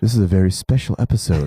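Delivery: deep put-on narrator voice. Recalling a sitcom's opening narration: Alan Thicke narrator voice. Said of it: "Alan Thicke would go".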